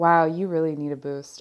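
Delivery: ordinary delivery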